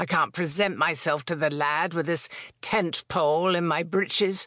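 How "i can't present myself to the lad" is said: usual speaking voice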